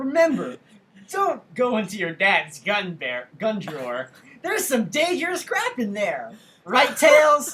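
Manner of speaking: swooping cartoon voice, public announcement delivery. Doing a kids' safety announcement as Sonic: Sonic PSA voice. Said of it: "because of Sonic Says".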